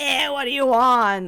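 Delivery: put-on loud, burly New York tough-guy accent. Retelling a story character's greeting reply: Tepig as a buff New Yorker. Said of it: "big buff New Yorker who's like".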